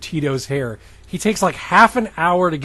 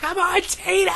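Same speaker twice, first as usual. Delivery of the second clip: shrill, very high screaming fan cheer. Describing a woman in the audience, the host imitates her: retelling a fan's scream. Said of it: "she's like screaming".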